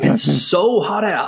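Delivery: put-on southern US accent. Quoting an old American man drinking on the golf course, imitating a big southern accent. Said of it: "in his big like southern sort of accent".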